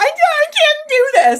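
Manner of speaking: put-on, high-pitched, loud, sobbing crying voice. Retelling being put in front of a camera: retelling own crying words. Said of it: "I was crying".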